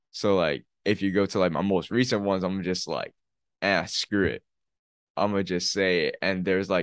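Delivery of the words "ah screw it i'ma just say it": ordinary delivery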